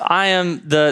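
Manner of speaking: normal talking voice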